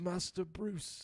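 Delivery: tired, weary put-on impression voice.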